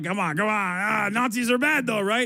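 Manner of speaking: coaxing, prodding character voice. Retelling what Alex Jones said to a guest: imitating Alex Jones. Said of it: "you got Alex Jones being like".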